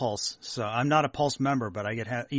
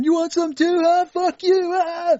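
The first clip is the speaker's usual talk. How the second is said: piercing, very high, very loud, drawn-out yell; 10 dB louder than usual. Joking about a dad firing a Nerf gun: shouting like Bill Paxton. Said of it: "was he shouting like, uh, Bill Paxton".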